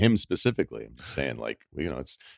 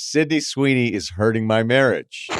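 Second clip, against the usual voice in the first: normal talking voice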